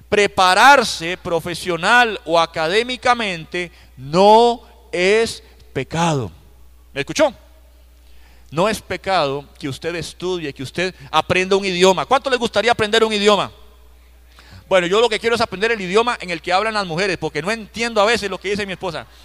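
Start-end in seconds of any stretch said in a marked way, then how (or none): 0.1-6.3 said slowly and deliberately. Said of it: "esto lo voy a decir despacito".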